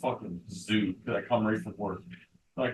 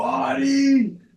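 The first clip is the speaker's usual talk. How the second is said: imitated scream, higher and louder; 10 dB louder than usual. Retelling screaming at them in a quiet room: imitating own screaming. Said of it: "screaming at them".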